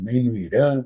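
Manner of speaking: ordinary delivery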